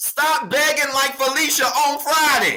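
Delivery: very high excited outburst. Telling listeners to stop begging god for things, speaking with a raised voice. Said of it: "I didn't mean to raise my voice".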